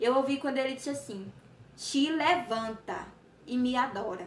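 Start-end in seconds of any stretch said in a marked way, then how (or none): 1.8-4.3 put-on stern, firm voice, spoken very slowly. Retelling what a voice commanded, imitating a firm, angry tone. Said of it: "Foi bravo".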